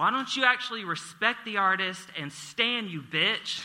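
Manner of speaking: high, loud, righteous indignant scream. Speaker recounts screaming across the street at a woman at a window, retelling a scream. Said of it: "I screamed".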